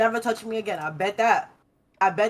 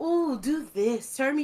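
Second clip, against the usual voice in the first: polite, slow, coy, suggestive tone; 3 semitones higher, 4 dB quieter than usual. Showing how to suggest something in bed: polite, suggestive tone. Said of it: "Be suggestible, polite".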